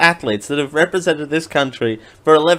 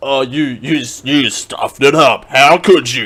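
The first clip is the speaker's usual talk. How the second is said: epic movie trailer announcer narration voice; 3 semitones lower, 3 dB louder than usual. Quoting a person who interrupted a clip to scold someone, movie trailer voice. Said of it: "All my impressions are going to be trailer man voice".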